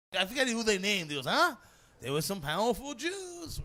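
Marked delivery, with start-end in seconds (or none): 1.2-3.6 put-on Yiddish-inflected accent, pitched up.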